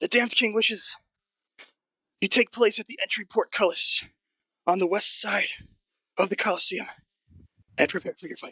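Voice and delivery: very high goblin voice, winded, gasping mid-phrase. Narrating to the players, voice the goblin rushing up with the king's message: out-of-breath goblin. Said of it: "that goblin rushes up, sort of out of breath".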